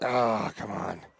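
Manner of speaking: play-acted, exasperated, frustrated grunting grumble. Apologizing to listeners for sounding frustrated: imitating own frustrated grunting. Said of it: "I know I'm grunting and like".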